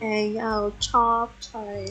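put-on British accent. Describing videos they keep seeing, imitating British TikTok. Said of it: "I'm stuck on British TikTok. It's like".

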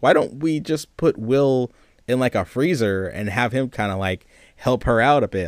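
ordinary delivery

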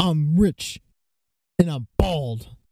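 mock yelling, fake confidence. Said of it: "like he has to yell at everything".

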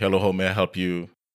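ordinary talk

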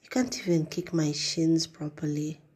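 ordinary talk

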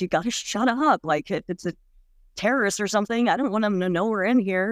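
put-on insistent, stern, urgent scolding tone. Speaker recalls yelling at a girl who kept crying, retelling a yell. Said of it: "I remember yelling at her".

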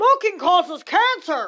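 mock alarm, loud, slow, booming delivery.

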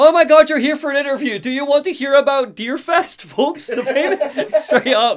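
acted gushing excitement, pitched way up, loud. Retelling a radio host greeting a visitor: imitating an excited person. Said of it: "he's so excited".

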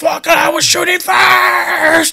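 loud, high, acted furious shout, first word stretched. Retelling another player screaming with his mic away, retelling an angry yell. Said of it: "just yelling".

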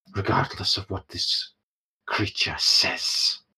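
put-on growling voice. Voicing Nimira, who doubts a bargain with devils: Nimira growling. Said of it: "growls a little bit and goes".

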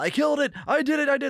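high-pitched, very high yelled shout. Retelling a player's outburst after stabbing the monster, imitating a shout. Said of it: "and just shouts out".

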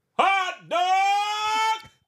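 loud screaming vendor-style yell. Stadium hot dog vendor shows how they call out on shift, screaming. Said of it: "I'm screaming".

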